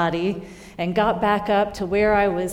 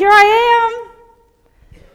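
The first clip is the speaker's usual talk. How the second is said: full-lung scream, very high and very loud; 12 dB louder than usual. Retelling calling out alone in the wilderness: imitating own past scream. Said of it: "started screaming at the top of my lungs".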